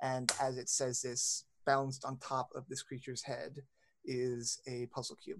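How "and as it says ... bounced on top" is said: ordinary delivery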